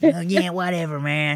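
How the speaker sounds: slow dragged-out drawl. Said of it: "he talks like this".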